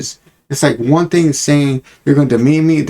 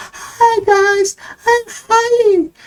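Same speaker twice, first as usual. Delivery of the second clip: very high, cutesy cartoon voice. Imitating a YouTuber greeting her viewers, in Heidi's little cartoon voice. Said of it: "her little cartoon voice she turns on".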